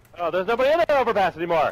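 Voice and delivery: loud, high excited yelling. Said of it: "I love how you yell".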